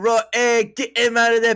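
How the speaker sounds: put-on Pakistani-sounding accent. Acting out how the characters spoke, the speaker slips into a Pakistani-sounding accent. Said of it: "Why are you doing a Pakistani accent again?".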